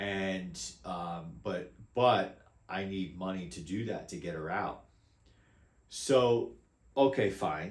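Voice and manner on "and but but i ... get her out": usual speaking voice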